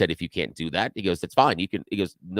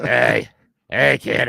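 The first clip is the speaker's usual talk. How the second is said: rough, raspy, creaky whiskey voice; 4 semitones higher, 4 dB louder than usual. Retelling how a tiny chain-smoking customer greets him: imitating a whiskey voice. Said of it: "she has the whiskey voice".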